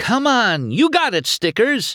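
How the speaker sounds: eager, very high, excited cheering cry. Sally watches McQueen race on television, exclaiming. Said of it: "Sally exclaimed".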